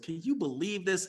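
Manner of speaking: furious, exasperated, incredibly angry griping tone. Retelling the man behind the speaker in a long line turning around, mock-angry. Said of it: "Incredibly angry".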